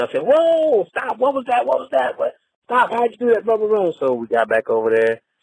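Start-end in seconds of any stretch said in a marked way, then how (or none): 0.2-3.9 high-pitched, excited, thrilled scream. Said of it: "and I screamed".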